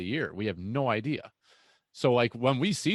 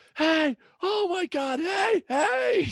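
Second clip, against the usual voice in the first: mock shrill screaming, pitched way up high; 4 dB louder than usual. Retelling a hunt, the speaker acts out a companion, imitating Brian screaming. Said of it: "Brian's just screaming".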